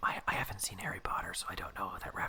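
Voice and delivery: soft, sheepish whispered aside.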